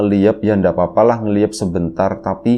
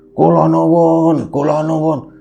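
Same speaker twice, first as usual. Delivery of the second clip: put-on angry-sounding, loud, high old woman's voice; 8 semitones higher than usual. Retelling a voice calling out at the door amid the knocking, imitating a loud old woman. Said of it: "suara nenek-nenek. Suaranya kenceng, kayak orang marah".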